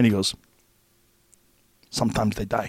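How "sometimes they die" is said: put-on thick Korean accent, quieter. Retelling the instructor's reply about the knockout: thick Korean accent. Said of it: "with his thick Korean accent".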